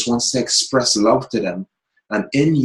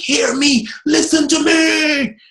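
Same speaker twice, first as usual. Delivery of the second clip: very high, very slow, drawn-out calling out. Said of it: "We have to shout like".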